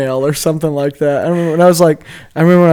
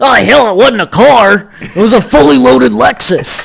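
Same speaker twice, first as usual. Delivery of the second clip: rough, creaky, loud, raised voice, drawn out; 6 semitones higher, 6 dB louder than usual. Doing a Nick Nolte impression about a fully loaded Lexus: Nick Nolte voice. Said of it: "my Nick Nolte impression again?".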